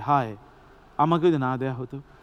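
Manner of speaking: plain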